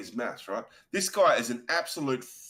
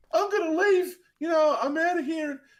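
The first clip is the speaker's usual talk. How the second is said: very high, teary, tearful crying voice; 4 dB louder than usual. Retelling what a woman said while leaving a dinner party, imitating someone crying. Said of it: "she's crying".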